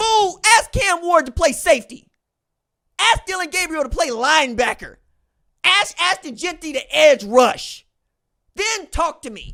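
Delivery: loud, heated, fired-up yelling. Arguing with people who doubt a player, yelling. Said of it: "I know why I'm yelling about this".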